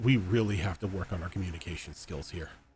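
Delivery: muttering under his breath. Playing a character standing before a casket: muttering under his breath. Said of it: "under his breath".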